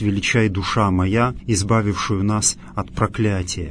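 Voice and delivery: ordinary talk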